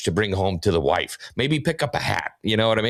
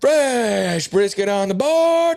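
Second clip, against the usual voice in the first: very high, very slow, drawn-out calling scream; 12 semitones higher, 3 dB louder than usual. Describing what the whole team calls out: imitating staff screaming. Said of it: "You'll hear the entire team screaming".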